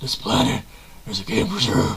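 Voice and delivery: exaggerated, heavy, deep, low rasp.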